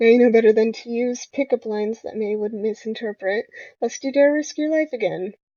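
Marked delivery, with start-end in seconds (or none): none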